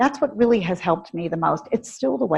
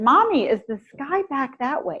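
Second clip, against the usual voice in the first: put-on tiny, high, squeaky child's voice; 7 semitones higher than usual. A mother retells her young daughter asking from the car, imitating Rebecca's squeaky voice. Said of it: "Rebecca had a really high, squeaky voice".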